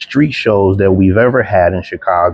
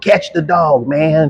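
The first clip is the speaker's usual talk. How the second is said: screaming voice, pitched higher; 8 semitones higher than usual. Retelling a dog-bite training drill, imitating someone screaming. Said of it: "I could hear Darnell screaming at me".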